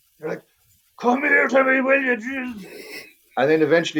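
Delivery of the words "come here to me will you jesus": very high, slow, drawn-out calling out. Acting out an owner shouting for a dog that won't come: imitating shouting for a dog. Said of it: "shouting for the dog".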